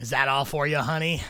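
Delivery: loud, heavy smoker's voice. Voicing a halfling barmaid offering a refill: halfling barmaid, heavy smoker's voice. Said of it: "she definitely sounds like she smokes a pack of cigarettes a day".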